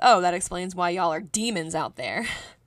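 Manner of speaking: put-on sarcastic tone. Telling a story, quoting another man's reply to him, retelling a sarcastic reply. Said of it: "he sarcastically responded with".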